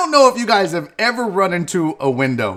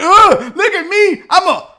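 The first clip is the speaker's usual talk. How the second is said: high, loud, mocking singsong. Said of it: "He's like".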